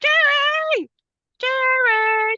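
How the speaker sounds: mock very high, drawn-out screaming. Recapping a scene where two characters scream into the night, imitating someone screaming. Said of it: "screaming into the night now for".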